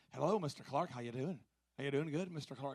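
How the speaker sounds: put-on Scottish accent. Speaker imitates the hotel staff greeting him, imitating Scottish accent. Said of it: "I'm trying to learn to imitate these guys".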